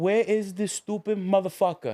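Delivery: furious, angry ranting in broken English. Retelling what a man shouted at the security guards, broken english impression. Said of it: "The most broken English you could hear".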